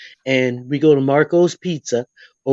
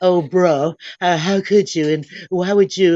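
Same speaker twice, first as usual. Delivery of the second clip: put-on sassy valley girl voice with attitude; 4 semitones higher than usual. Describing a granddaughter's attitude, imitating her valley girl talk. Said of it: "sometimes she talks like a va-, a valley girl".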